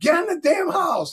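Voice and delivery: acted, very high, shrill yelling. Retelling a mom calling two people in from a driveway argument: imitating someone yelling. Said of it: "your mom's yelling".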